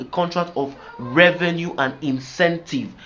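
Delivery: stress on incentive. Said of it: "Emphasis on incentive".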